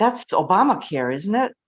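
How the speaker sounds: mock disapproving tone. Retelling what a caller said on the phone: imitating a disapproving tone. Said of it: "she said it in a tone of voice like, "That's, that's a bad thing."".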